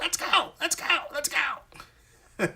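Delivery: very high, squeaky voice, spoken slowly. Speaker shows how a man says his catchphrase, imitating his squeaky voice. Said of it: "in his squeaky voice".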